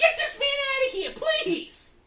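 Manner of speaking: put-on shouting character voice. Playing Brenda in prison, calling for the visitor to be removed: Brenda shouting for help. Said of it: "with Artie and Brenda".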